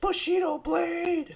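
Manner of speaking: very high, excited, all-caps shout. Imitating the other speaker reacting to a game reveal: shouting in all caps. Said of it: "all caps".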